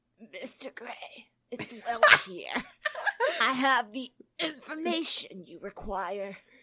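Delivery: put-on rasping, weak, sickly old man voice. Reading a story aloud, a caller reports to Mr. Gray in Welch's rasping disembodied voice. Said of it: "A rasping, disembodied voice".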